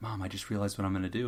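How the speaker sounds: imitated smiling voice. Retelling a child telling his mom a plan: imitating someone smiling. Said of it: "he's all smiling and stuff".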